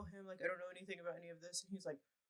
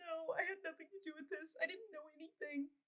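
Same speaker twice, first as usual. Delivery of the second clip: mock tearful, sobbing pleading tone, very high pitch; 10 semitones higher, 4 dB quieter than usual. Retelling an arrest, the speaker imitates the arrested woman crying. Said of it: "she's like crying like that the whole time".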